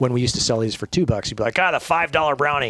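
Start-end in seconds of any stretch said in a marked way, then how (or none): 1.6-2.7 full-on, exaggerated pirate voice. Retelling how Dan Call teased them about the brownie price, imitating Dan Call's pirate voice. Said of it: "like this fucking five star pirate voice".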